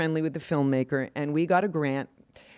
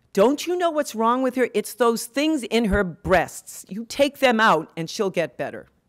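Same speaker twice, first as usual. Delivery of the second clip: high, loud, desperate scream in broken English. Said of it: "she screams at the other family members".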